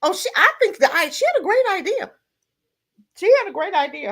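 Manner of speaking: voice catching with emotion. A speaker gets choked up while crediting a young lady's idea: choked up. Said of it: "I'm getting choked over here".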